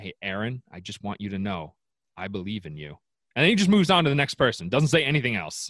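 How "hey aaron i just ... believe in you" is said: hushed put-on voice, quieter and slower. Imagining Brian Cashman's clubhouse pep talk to each player; quiet Brian Cashman impression. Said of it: "really quietly says like".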